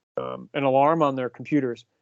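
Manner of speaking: plain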